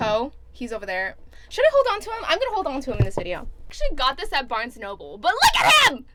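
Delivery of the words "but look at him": delighted, loud squealing shout, pitched way up. Showing off a potato named Poe in a video, screaming excitedly. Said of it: "Sorry, I'm screaming".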